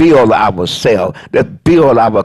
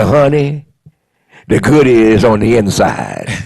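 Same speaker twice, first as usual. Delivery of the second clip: put-on, changed grandmother voice. Retelling how a woman praised the bottom crust: imitating her changed voice. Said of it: "she would change her voice and say".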